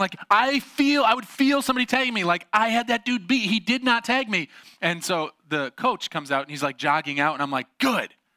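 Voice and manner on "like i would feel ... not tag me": acted-out, re-enacted screaming, pitched higher. Retelling a play where the other player never tagged them, the speaker is retelling screaming. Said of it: "And so I'm like screaming".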